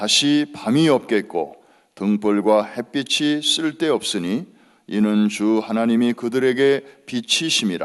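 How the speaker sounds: loud, full-voiced group reading in unison.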